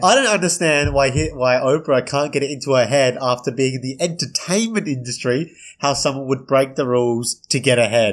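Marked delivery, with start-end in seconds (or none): none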